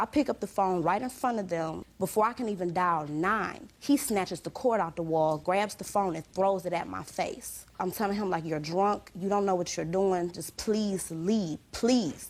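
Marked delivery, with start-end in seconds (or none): 8.5-12.3 acted pleading, begging tone. Retelling begging a drunk man to leave, retelling a plea. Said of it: "I'm pleading him".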